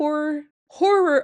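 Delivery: Midwestern accent showing through. Reading a genre label aloud, with a Midwest accent slipping out. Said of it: "Midwest accent coming out".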